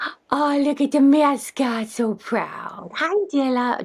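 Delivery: high, soft cooing voice.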